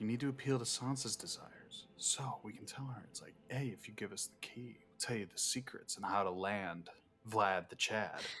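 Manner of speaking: speaking in a whisper. Whispering a plan to another player in a game: whispering. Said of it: "I'm gonna whisper".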